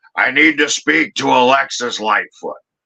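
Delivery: put-on gravelly, rough voice. Retelling a phone call, the speaker voices the caller in a gravelly Harley Race voice. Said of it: "that gravelly Harley Race voice".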